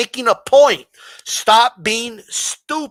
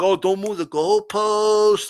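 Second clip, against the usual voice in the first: mocking, whiny crybaby voice; 3 dB quieter than usual. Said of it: "what a crybaby".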